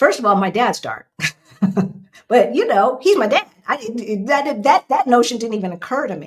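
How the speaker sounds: on the verge of tears, fast. Remembering how the speaker's dad asked questions, getting teary. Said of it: "I'm getting teary thinking about it".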